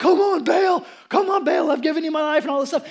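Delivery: mock loud, desperate, frenzied, frantic pleading. Retelling the story of Baal's prophets, the speaker imitates their frantic pleading. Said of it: "they're getting more and more frantic".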